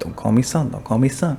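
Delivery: normal talking voice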